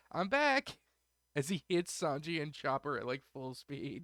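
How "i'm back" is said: very high, screamed crying yell. Retelling how Luffy rockets onto the ship: imitating Luffy screaming. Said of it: "he just screams".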